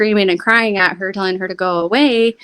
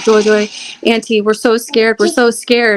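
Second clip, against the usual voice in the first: usual speaking voice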